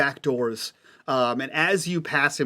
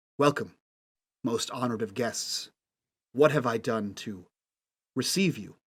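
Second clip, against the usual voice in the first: speaking in a low, hushed tone; 3 semitones lower, 5 dB quieter than usual. A storyteller voices the host greeting the guests who followed him in, in a low tone. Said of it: "he speaks in a low tone and says".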